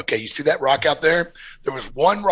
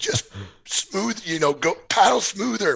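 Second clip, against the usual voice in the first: put-on shout, higher pitch; 5 semitones higher than usual. Retelling calling across a river to someone paddling: retelling own yell. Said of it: "I'm yelling across".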